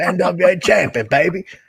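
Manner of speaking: rough gravelly smoker voice. Imitating Tommy Rich's talk: Tommy Rich smoker's voice. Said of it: "He's got that smoker's voice".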